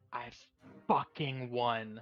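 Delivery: quiet hushed voice. Retelling a character's words as she sinks to her knees: hushed tone. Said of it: "you just hear in like a hushed tone".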